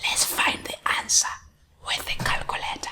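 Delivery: soft, hushed, conspiratorial whisper.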